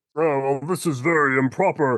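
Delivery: puppet eagle character's way of talking. Describing a puppet character's usual line: Sam the Eagle voice. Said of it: "Sam the Eagle shows up to be like".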